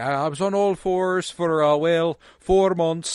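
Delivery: heavy put-on Irish accent. Quoting a woman on a red carpet about playing a donkey, in a thick Irish accent. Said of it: "she's doing like a really thick Irish accent".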